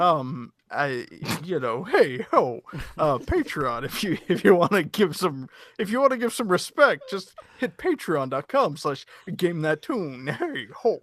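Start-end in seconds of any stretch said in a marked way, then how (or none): 1.8-11.0 put-on old-school, fumbling stand-up comic voice. Answering a question about Patreon as Rodney Dangerfield: Rodney Dangerfield voice. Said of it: "what does Rodney Dangerfield think about fucking Patreon".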